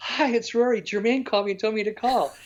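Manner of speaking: put-on high, kid-like voice. Retelling his first phone call to a band's road manager, sounding like a kid. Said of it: "and I'm like a kid".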